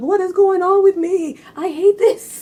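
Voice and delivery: mock crying, very high-pitched, tearful whiny voice. Retelling crying to mom as a child: imitating own past crying. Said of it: "crying to my mom".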